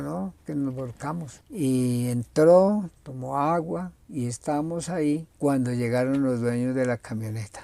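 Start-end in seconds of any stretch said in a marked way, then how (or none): none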